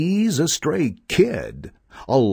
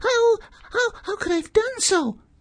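pleading, begging, much higher. Narrator reading the lamb's reply to the wolf, pleading. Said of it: "pleaded the lamb".

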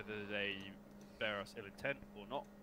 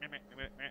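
squeaky, high-pitched put-on voice; 4 semitones higher than usual. Imitating one of two voices heard arguing: high-pitched voice. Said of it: "There was one kind of this high pitched voice".

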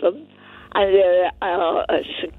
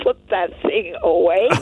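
ordinary talk, nothing marked

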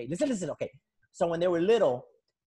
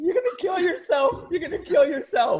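very high, weepy, sobbing crying voice; 11 semitones higher, 4 dB louder than usual. Retelling the wife's plea to an uncle on the roof: imitating someone crying. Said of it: "there's the wife crying".

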